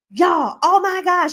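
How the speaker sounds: high, loud, hollered yell. Telling how a friend stormed off and yelled to the group, retelling a yell. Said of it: "yells to the group".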